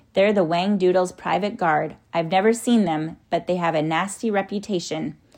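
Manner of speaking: usual speaking voice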